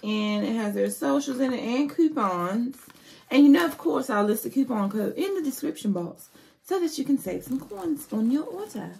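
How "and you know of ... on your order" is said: higher, quick fake British accent. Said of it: "That's my British accent".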